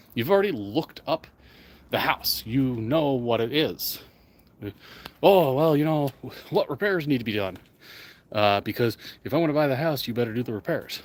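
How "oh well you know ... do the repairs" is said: ordinary delivery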